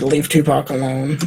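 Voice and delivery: ordinary talk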